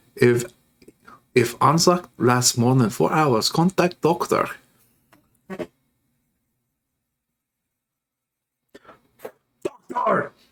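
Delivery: thick put-on German accent drifting toward Russian. Speaker tries out a put-on accent on a line: heavy German accent. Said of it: "German accent".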